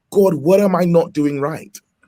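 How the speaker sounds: crying, acted out. Retelling a prayer at the computer, acting out past crying. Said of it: "I'm literally crying".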